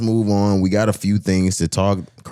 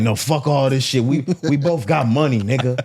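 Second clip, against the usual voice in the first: put-on drunk voice, higher pitched; 6 semitones higher than usual.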